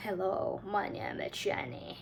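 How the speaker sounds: low, soft, deliberately deepened put-on voice. Showing the voice to practice for delivering a speech: deep voice. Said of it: "I should practice the deep voice like".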